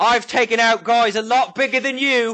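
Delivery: aggressive menacing voice. Voicing a bar owner aiming a crossbow at intruders: aggressive threatening barkeep. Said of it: "very aggressively bring the heavy crossbow up".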